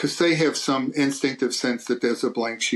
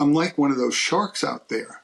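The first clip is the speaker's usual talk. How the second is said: plain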